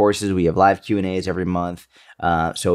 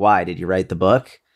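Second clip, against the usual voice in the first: put-on sarcastic voice. Retelling what a nearby woman asked about the book, imitating her sarcastic tone. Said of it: "It was almost like a sarcastic".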